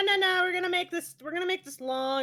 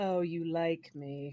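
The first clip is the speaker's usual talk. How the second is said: silky smooth, soft, very low tone; 10 semitones lower, 7 dB quieter than usual. Describing a game character's line after a fight, in a smooth-toned voice. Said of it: "in like a very smooth toned voice, not his normal gravelly".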